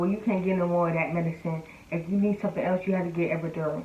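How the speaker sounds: ordinary talk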